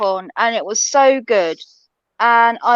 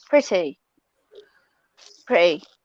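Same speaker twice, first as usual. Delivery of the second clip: pretty said with a British accent; 5 semitones lower, 3 dB quieter than usual. Repeating a word back to another speaker: British accent. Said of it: "that British accent doesn't half come out of you".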